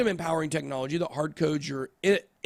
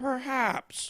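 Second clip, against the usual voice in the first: cartoon dad voice, nudged up in pitch; 8 semitones higher, 5 dB quieter than usual. Reading a meme caption aloud, Peter Griffin impression. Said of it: "that's my Peter impression".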